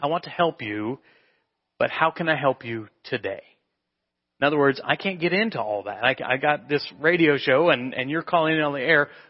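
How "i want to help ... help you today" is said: mock-tender, gentle, imitated tender tone. Describing a radio host answering a caller, imitating a gentle, tender tone. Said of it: "He's gently, tenderly saying".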